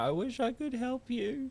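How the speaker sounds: mock, very high, slow, drawn-out blubbering crying voice. Retelling a video of a woman crying: mock crying. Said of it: "she's just crying like".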